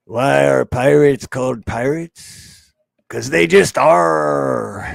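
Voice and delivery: put-on rough old pirate voice, "are" drawn out. Telling an old joke, the speaker does a pirate voice. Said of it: "the old pirate pirate voice".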